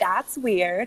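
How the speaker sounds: clumsy, bad, failed American accent. A player repeating the others' remark, trying an American accent. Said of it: "I can't do an American accent".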